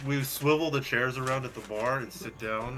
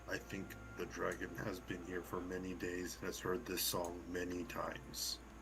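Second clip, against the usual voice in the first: hushed, barely audible half-whisper; 4 semitones lower, 13 dB quieter than usual. Voicing Orin speaking to Shadow: half-whispering in character. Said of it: "Orin whispers to Shadow".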